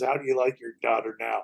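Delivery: deep, low, demonic voice. Retelling a scary scene with the daughter and mother, in Regan's demonic voice. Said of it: "Reagan in some demonic voice says".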